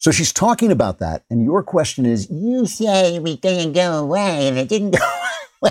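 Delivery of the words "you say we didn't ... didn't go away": put-on toddler voice, high and swooping. Mocking someone's reply to a question, in a toddler voice. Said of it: "I have to do that voice because that's what it's like. It's like a toddler".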